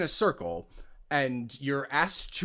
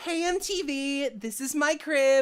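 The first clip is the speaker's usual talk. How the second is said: put-on girlish voice, very high, slow, drawn out; 12 semitones higher than usual. Performer showing the girl voice from a demo reel, in a high girlish voice. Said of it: "I have like one girl-ish voice".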